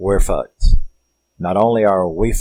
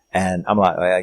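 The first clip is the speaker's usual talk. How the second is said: ordinary talk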